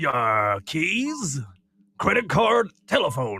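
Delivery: put-on pirate voice. Answering a quiz question when asked: pirate voice. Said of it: "in your best pirate voice".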